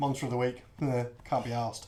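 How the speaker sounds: ordinary talk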